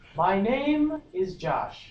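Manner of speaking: high, slow, loud projected voice.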